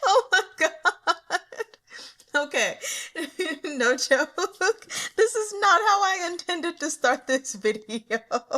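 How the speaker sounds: talking through laughter. Starting the video, the speaker can't stop laughing while talking. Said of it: "I don't even know why I'm laughing".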